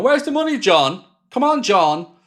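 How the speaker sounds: high-pitched screaming. Picturing the January transfer window with the team ninth: acting out screaming. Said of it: "where I'm screaming again, going".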